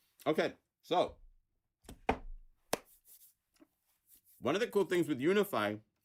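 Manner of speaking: talking while chewing. Speaker eating in front of the audience talks while munching. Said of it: "as I'm munching away, sorry for eating in front of you guys".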